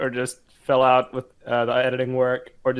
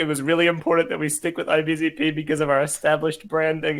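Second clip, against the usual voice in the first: usual speaking voice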